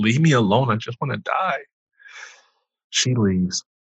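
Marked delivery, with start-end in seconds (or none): 0.0-1.6 mild, subdued, held-back pleading scream. Retelling being prayed over in a hospital room: imitating own screaming. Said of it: "I'm just screaming".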